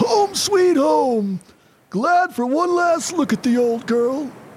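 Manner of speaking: put-on high, slow, fond old dwarf voice, savoring words.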